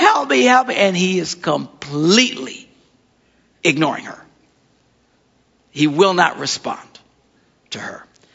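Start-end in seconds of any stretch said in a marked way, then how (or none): 0.0-0.7 high, mock pleading cry, calling out. Retelling a woman who keeps begging for help: imitating a woman crying out for help. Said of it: "she keeps crying after us".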